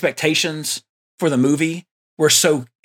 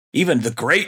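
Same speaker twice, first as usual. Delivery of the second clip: very sarcastic, heavy sarcasm; 2 semitones lower than usual. Calling an actor great with air quotes: very sarcastic. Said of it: "I say that with air quotes and very sarcastically".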